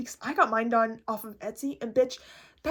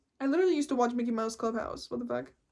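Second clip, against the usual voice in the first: ordinary talk, nothing marked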